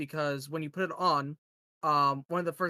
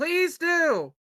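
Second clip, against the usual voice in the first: shrill, very high, loud yelling shout; 13 semitones higher, 7 dB louder than usual. Voicing a character answering the players, shouting. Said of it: "she shouts".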